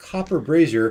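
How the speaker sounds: plain reading voice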